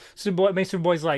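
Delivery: plain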